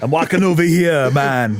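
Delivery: put-on New York accent, very slow. Joking about a movie casting, imitating Schwarzenegger doing a New York accent. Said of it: "I wanna see Schwarzenegger doing a New York accent".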